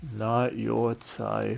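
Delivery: very quiet, muttered, mumbled under the breath. Retelling an anime flashback where a rejected character repeats the words: imitating a mumble. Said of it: "he just mumbles".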